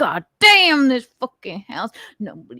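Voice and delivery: mock quiet muttering. Retelling how a man curses under his breath: imitating someone muttering quietly. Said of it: "he says very quietly after go".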